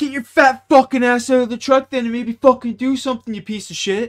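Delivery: very high, loud, furious angry yell. Retelling talking back to a foreman who never left the truck: imitating yelling back at a boss. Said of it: "We turn around like".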